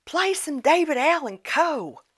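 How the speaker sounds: put-on very high, drawn-out drunken holler. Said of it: "he yelled it again".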